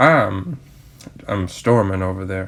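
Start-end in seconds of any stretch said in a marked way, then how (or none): none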